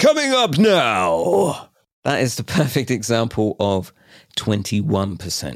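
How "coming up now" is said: very high, dramatic, swooping, booming TV announcer voice. Speaker imitates the guy who voices a TV talent show: Britain's Got Talent announcer voice. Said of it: "the guy who does the voice for Britain's Got Talent".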